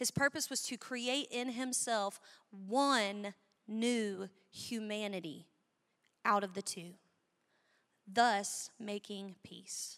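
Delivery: slow, unhurried, savoring reading with one word drawn out. A speaker reads a bible passage aloud to listeners, reading slowly. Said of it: "I'm going to read this slow".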